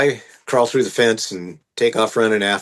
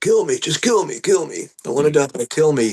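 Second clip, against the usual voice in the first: put-on yelling with higher pitch; 5 semitones higher than usual. Retelling a suspect yelling during an arrest: imitating someone yelling. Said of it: "he starts yelling at me to kill him".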